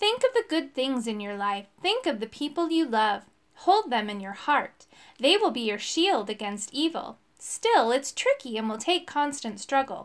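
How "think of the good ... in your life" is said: plain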